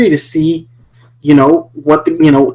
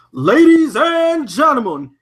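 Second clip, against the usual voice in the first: put-on boxing ring announcer voice, higher, quieter; 10 semitones higher, 5 dB quieter than usual. Starting an event announcement, then breaking off: Bruce Buffer announcer voice. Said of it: "I don't know how Bruce Buffer does this".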